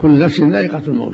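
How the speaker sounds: ordinary delivery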